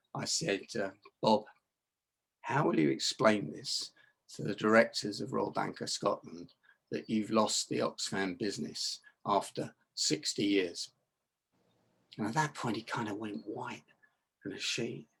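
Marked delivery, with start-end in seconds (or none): 1.2-10.9 hushed, quiet, tough tone. Speaker retells what he said to a man, re-enacting his quiet, tough tone. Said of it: "in that quiet voice tonality that you use when you want to say something really tough".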